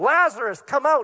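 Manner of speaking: loud, ringing, commanding voice, called out. Retelling the lazarus story, the speaker quotes the call at the grave in a loud voice. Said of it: "in a loud voice".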